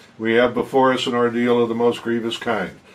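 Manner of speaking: level, flat reading with little stress. Demonstrating a speech reading, flat reading with little emphasis. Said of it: "that's flat".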